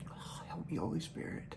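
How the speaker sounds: hushed near-whisper, fighting back tears. A speaker who has a message for the listeners, fighting back tears. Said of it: "I'm going to get it together".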